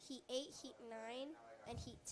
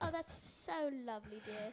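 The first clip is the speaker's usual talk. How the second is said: put-on mock British accent, louder; 10 dB louder than usual. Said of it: "not even my British".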